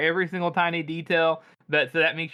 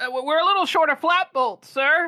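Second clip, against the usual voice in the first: nervous stammering sergeant voice, scared, flustered, higher pitch; 12 semitones higher, 4 dB louder than usual. Voicing a sergeant caught by a general and his staff: nervous stammering sergeant. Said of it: "I like to imagine this guy's like".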